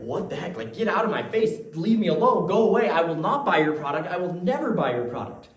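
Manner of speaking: loud, irritated, fed-up, annoyed tone. Playing the person answering the door to a yelling salesman: acting out an annoyed refusal. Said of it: "You'd be like".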